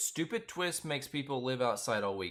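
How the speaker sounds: ordinary talk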